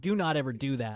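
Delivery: angry, pissed-off, stern scolding tone. Retelling how she turned to the speaker and reacted, imitating an angry warning. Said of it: "she was pissed".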